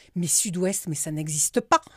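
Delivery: put-on near-aggressive, incredulous tone. Retelling how a girl's father challenged the speaker, mock-aggressive incredulous tone. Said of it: "mais limite agressif".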